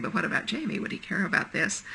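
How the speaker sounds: normal talking voice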